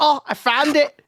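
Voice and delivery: put-on Scottish accent, very high pitch, very slow and drawn out. Repeating another player's call after finding a die: imitating a Scottish-sounding exclamation. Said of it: "it sounded like you went Scottish".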